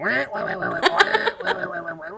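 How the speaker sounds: whiny, wailing penguin voice.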